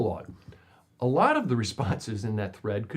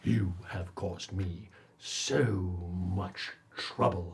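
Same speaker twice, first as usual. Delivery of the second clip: deep, hushed, resonant, theatrical villain voice; 6 semitones lower, 6 dB quieter than usual. The villain addresses the players' characters in a deep, resonant, dramatic voice. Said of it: "In his deep, resonant voice, he dramatically says".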